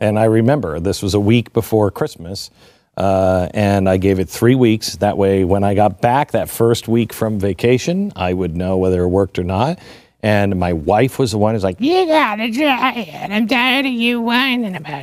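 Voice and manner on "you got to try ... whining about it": very high, exasperated, fed-up insistent tone. Retelling what his wife said about trying it: impersonating his wife. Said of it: "my impersonation anyway".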